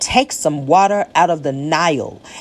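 plain

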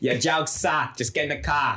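put-on, fake Boston accent. Acting out a girl who never finds the jokes funny: put-on Boston accent. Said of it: "that's my Boston accent".

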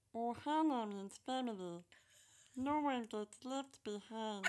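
cartoon alien creature voice. Speaker brings out a Stitch voice while playing. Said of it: "Let's see if we can bring Stitch out".

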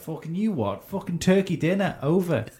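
put-on chav voice. Telling friends about a group in a corner house, imitating a chav. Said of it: "Chav translation".

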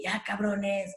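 put-on, high, hollered full shout. Acting out the man who came in to get you out of a hold, retelling a man's shouting. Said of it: "se empezó a gritar".

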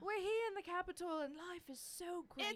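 high-pitched put-on British accent with newsreader delivery. Imitating a hostage's fake news report: put-on British accent. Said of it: "in a British accent that was like".

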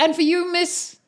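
very high, loud shout. Voicing a character calling out toward the cloak rack: shouting across the room. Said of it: "he shouts towards the, the cloak rack".

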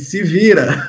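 mock laughter running through the speech. Speaker retells how the interviewee laughed and brushed off his request, retelling a laughing reply. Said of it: "Aí ele deu risada e falou assim".

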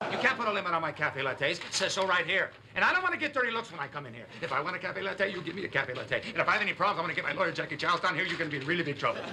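fast, rushed, worked-up, agitated rattled-off complaining. A character complaining until someone tells him to slow down, fast, rushed speech. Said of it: "slow down".

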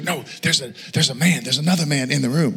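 put-on whisper-shout. Retelling how a spouse woke the speaker at night, imitating a whisper-shout. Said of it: "She whisper shouts at me".

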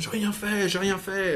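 very high, frantic, panicked shouting. Narrator voicing a woman struggling in front of the guards, shouting. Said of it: "Elle crie".

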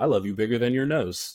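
imitated flat deadpan tone. Retelling his reply to her, imitating his deadpan delivery. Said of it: "he looked at me deadpan in his face".

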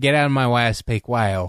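ordinary delivery

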